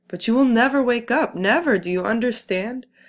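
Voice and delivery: screaming out, high and loud. Reading the narrator's cry to his tired father; screaming. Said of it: "I screamed into the wind".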